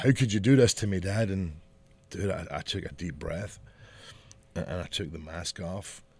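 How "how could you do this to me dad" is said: put-on angry voice. Retelling the son's words after he got mad: imitating Ian angry. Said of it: "And then he got mad".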